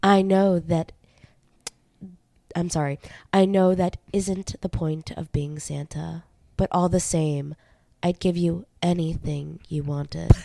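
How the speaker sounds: sultry, seductive voice. Reading aloud a letter written to santa: sultry voice. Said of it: "you put on your sultry voice".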